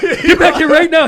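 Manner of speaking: terrified screech, very high and very loud. Retelling a frightened friend pulling him from the cockpit: imitating a scared friend shouting. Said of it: "he was so freaking scared".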